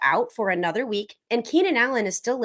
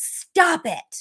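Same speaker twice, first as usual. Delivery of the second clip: put-on high, short coach-style yell; 7 semitones higher than usual. Retelling how the head coach Mike McDaniel yelled at a player: imitating Mike McDaniel yelling. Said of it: "yelled at Justin Fields".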